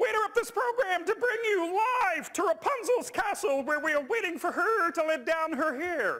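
squeezed-up, high and loud voice. Speaker demonstrates whose voice he copied; terrible Kermit the Frog impression. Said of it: "that is a terrible Kermit the Frog impersonation".

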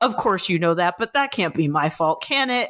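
ordinary talk

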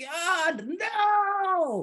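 very high yell with a stretched, drawn-out no. Retelling how a friend yelled up to the stage: imitating a friend yelling. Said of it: "he yelled up to the stage".

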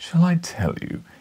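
cooed, very high voice. A man questioning the narrator speaks again, cooing. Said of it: "he cooed".

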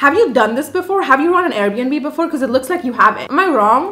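mock, needling, sarcastic teasing tone. Retelling questioning an Airbnb host about his experience, in a retold mocking tone. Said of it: "are you mocking me?".

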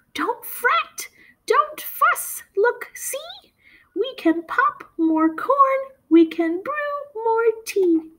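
very high, squeaky little mouse voice. Narrator reading a story aloud, voicing Mouse's line in a squeaky mouse voice. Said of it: "Mouse squeaks".

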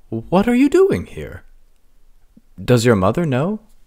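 high, swooping, disbelieving, astonished exclamation. In a read story, the mayor sees Princess Belina, exclaiming in disbelief. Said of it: "the mayor exclaimed, as if he couldn't believe his eyes".

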